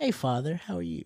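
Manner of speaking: very soft, hushed, put-on, overly proper voice.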